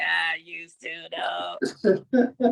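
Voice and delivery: very slow, mechanical electrolarynx-style throat voice-box speech. Imitating the lady who holds a device to her throat in a smokers' commercial: imitating throat voice-box speech. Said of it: "that lady in that commercial for smokers where she put that thing to her throat".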